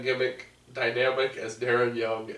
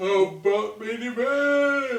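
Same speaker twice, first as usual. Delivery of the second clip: very high, drawn-out speech through a yawn; 10 semitones higher than usual. Asking about the next show to discuss, yawning while talking. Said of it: "I was yawning".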